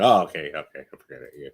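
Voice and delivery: mock disappointed voice. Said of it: "you sounded so disappointed".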